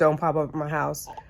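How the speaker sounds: ordinary delivery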